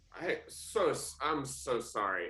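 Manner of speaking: put-on acting as a drunken fool. Playing a character acting drunk after bumping into a captain: acting as a drunken fool. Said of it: "act as a drunken, disheveled fool".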